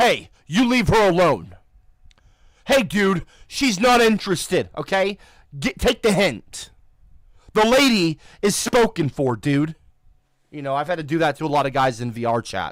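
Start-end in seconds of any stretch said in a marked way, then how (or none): 0.0-9.8 raised voice with swooping pitch. Recalling guys hitting on girls in vr chat, retelling a raised voice. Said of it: "I'll raise my voice".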